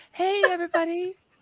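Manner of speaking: high, pathetic, cute voice. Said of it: "he just sounds so pathetic, so cute".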